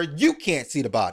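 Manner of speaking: ordinary talk, nothing marked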